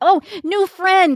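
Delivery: thrilled, excited squeal, very high-pitched. Voicing Arnold, who is really excited to meet a stranger: excited Arnold voice. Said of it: "Arnold's really excited".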